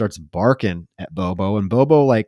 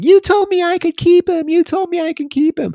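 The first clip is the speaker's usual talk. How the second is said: mock spoiled-brat tantrum, very high-pitched bratty screaming; 4 dB louder than usual. Retelling a little girl's outburst at a man, imitating her screaming. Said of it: "she like starts screaming".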